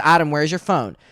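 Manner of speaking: acted stern motherly voice. Retelling how a mom questioned them about a missing phone: imitating mom talking sternly. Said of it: "she starts sternly talking to me".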